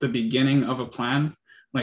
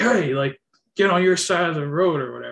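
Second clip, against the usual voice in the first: play-acted, quick, pitched-up yell; 5 semitones higher, 4 dB louder than usual. Retelling how a man coming fast on the trail yelled at them, retelling a yell. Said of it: "he just like yelled at us like".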